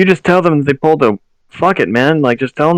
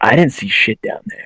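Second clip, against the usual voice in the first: low, hushed whisper under the breath; 4 semitones lower than usual. Answering in character during a roleplaying game, whispering. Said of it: "Like I'm like whispering".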